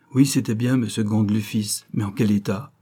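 ordinary delivery

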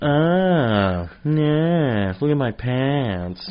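exaggerated, overdone, very slow, drawn-out sing-song. Retelling how others do an impression of the speaker: exaggerated impression of own voice. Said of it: "an exaggeration of my voice".

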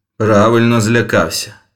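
forced out through clenched teeth. Narrator reads Pierre's reply to frightened Okop-Aum, said through clenched teeth. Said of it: "процідив П'єр".

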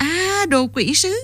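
gleeful, high-pitched cry, very slowly drawn out. Athen reacts to the other man's disguise with a delighted exclamation. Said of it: "thốt lên giọng hớn hở".

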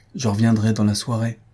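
ordinary talk

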